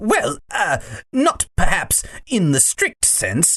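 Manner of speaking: hesitant, stammering voice. Reading a story aloud, Uncle Andrew answers the witch, Uncle Andrew stammering. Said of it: "stammered Uncle Andrew".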